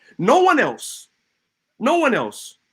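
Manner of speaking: emphatic, high, swooping outburst, words stretched out. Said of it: "sorry about yelling".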